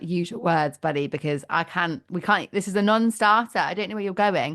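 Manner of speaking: usual speaking voice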